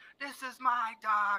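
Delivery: put-on very slow, high, stretched-out screaming. Retelling the former commander screaming at their reunion: imitating someone screaming. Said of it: "He just screaming".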